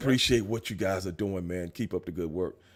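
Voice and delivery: very low, deep, hushed, soft raspy voice. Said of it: "that kind of raspy voice".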